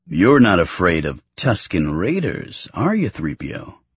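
ordinary talk

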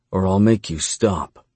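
ordinary delivery

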